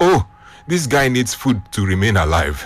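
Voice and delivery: ordinary talk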